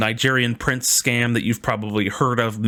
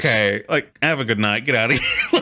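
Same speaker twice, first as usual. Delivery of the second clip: put-on voice holding back laughter. Retelling what the cop said after a traffic stop, imitating someone holding back laughter. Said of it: "whenever you try not to show people that you're laughing".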